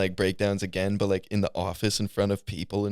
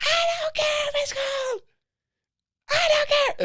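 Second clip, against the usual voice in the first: put-on screaming, higher pitch. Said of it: "she screamed at us like that".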